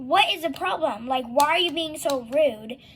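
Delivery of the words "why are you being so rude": ordinary talk, nothing marked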